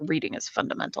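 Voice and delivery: put-on mutter under breath. Retelling own remark to customers asking for restrooms: retelling a mutter under breath. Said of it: "under my breath".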